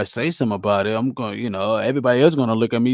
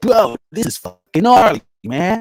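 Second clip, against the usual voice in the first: put-on voice, much higher in pitch; 8 semitones higher, 4 dB louder than usual.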